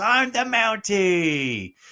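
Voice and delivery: shrill, very high, loud shout.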